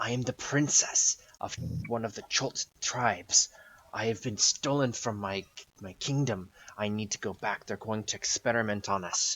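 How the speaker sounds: soft, quiet hissing whisper. Voicing a captive princess trying to be quiet but clear, in a soft hissing whisper. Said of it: "in her kind of her soft voice, she's kind of like whispering or hissing".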